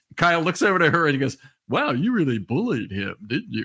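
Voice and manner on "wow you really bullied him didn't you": playful, teasing sing-song tone. Retelling a player's jab at a reporter: imitating Kyle's joking voice. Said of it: "it was in that kind of voice".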